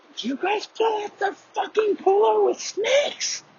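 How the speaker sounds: very high-pitched, screeching scream. Retelling how mom found the snakes in the cooler: imitating mom screaming. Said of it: "Screaming so loud".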